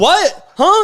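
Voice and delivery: mock affronted, taken-aback reaction. Retelling how a girl reacts to being compared: imitating an offended girl. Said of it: "they get all offended".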